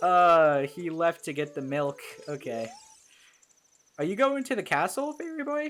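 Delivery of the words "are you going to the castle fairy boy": voice breaking up, cracking very high. Speaker voices a character asking Fairy Boy a question, voice cracking. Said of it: "that voice crack".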